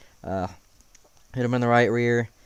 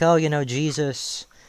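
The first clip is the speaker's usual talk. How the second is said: ordinary delivery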